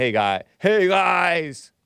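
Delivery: put-on voice, slowed, with "guys" stretched out long. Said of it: "deepness when I'm saying".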